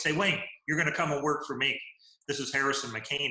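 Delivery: rough, gruff tone. Retelling an unexpected phone call offering the speaker a job: Harrison McCain's gruff voice. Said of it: "in his gruff voice".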